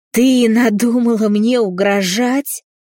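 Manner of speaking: high, furious roar like a wounded bison. A father confronts his daughter who refuses him, roaring. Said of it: "взревел раненым бизоном отец".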